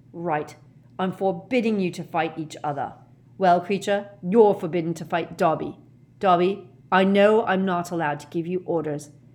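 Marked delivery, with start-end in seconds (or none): none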